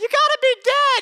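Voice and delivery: put-on shrill, very high, loud little boy shout. Retelling a little boy standing up in the back to answer, imitating a little boy. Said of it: "A little boy in the back stands up and goes".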